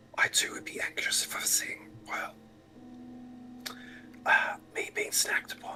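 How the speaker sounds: soft, unvoiced whisper. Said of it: "We're whispering".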